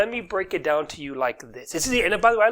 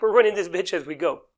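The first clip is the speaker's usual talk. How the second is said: normal talking voice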